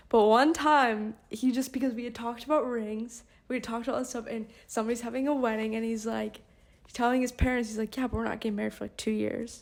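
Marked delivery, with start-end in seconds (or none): 7.9-9.6 put-on dead serious voice, quieter. Retelling a partner telling his parents about the wedding: imitating Brayden dead serious. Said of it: "dead serious".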